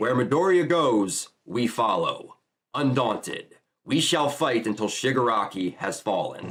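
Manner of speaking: ordinary talk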